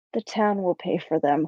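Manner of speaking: muttered quietly under the breath. After agreeing aloud to the other person, the speaker adds a remark: muttered under breath. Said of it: "And under my breath".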